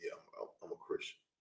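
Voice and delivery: barely whispered, hushed, under-the-breath mutter. Acting out someone admitting their faith, muttering under breath. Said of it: "underneath your breath".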